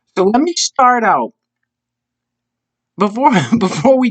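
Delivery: giggling, nonstop laughing through the words. Opening a video, the speaker can't stop laughing while talking. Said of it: "I can't stop laughing".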